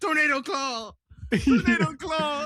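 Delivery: mock very high-pitched, wild, drawn-out battle cry. Imitating a costumed man shouting his move: imitating a man yelling as Wolverine. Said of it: "some fat guy in a full Wolverine costume".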